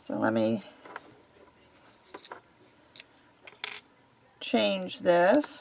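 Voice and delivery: smothered voice. Talking through work after putting on a mask: voice muffled by a mask. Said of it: "my voice is muffled".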